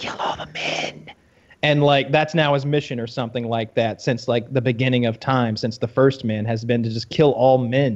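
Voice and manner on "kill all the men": slow, hushed, breathy whisper. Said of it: "then whispers in his ear".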